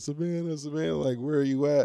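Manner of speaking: acted, panicked, high, frantic screaming yell. Speaker retells running back inside searching for someone, retelling a scream. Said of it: "I'm screaming".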